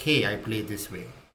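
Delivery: ordinary delivery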